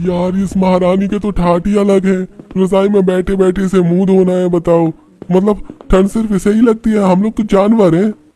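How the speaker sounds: very high-pitched, sarcastic grumbling voice. A servant complains about the young mistress to another servant, grumbling servant. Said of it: "नौकर आपस में [name] की बुराई करते हुए उसके पास जाते हैं। / नौकर आपस में [name] की बुराई करते हुए उसके पास जाते हैं। / मैं तो तंग आ गया हूँ इससे।".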